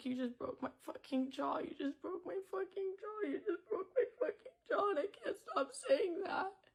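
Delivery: soft sobbing, words spoken through tears. Retelling going to the bathroom with a broken jaw, imitating own crying. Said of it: "And I'm just crying and I'm like".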